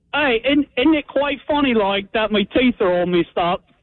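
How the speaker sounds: high-pitched British accent impression. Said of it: "I was gonna do a British impression".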